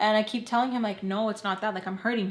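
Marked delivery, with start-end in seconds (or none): none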